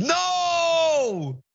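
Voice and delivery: very high, long-held, drawn-out shriek. Retelling how an old lady at the door reacted: imitating someone screaming. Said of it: "she screams".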